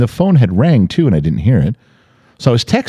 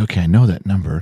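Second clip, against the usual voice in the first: normal talking voice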